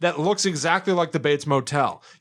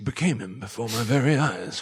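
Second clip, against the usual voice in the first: very low, pretentious, grandly poetic delivery; 7 semitones lower, 4 dB quieter than usual. Imitating Doctor Steiner, who thinks in pretentious poetic terms. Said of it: "you think in, like, really pretentious poetic terms".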